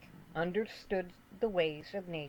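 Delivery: plain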